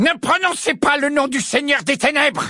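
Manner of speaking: very high booming bellow. Snape, glaring at Harry, reads as bellowing. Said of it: "vociféra Rogue".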